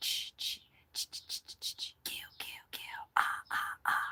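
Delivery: breathy whisper with a whispered ch-ch-ch sound. Retelling a friend doing the Friday the Thirteenth thing: imitating a friend's Friday the 13th sound. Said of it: "the Friday the thirteenth thing where she's like".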